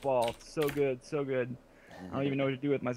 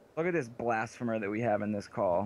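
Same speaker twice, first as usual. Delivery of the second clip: normal talking voice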